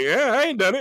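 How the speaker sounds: put-on sarcastic voice. Retelling a line Dale Curry said on a telecast: imitating Dale Curry's sarcasm. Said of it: "you heard the sarcasm in Dale's ver-, uh, voice".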